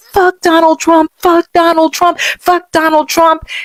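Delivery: furious, very high-pitched angry yelling. Recounting a man heard on the phone, imitating a man yelling. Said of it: "That man started yelling".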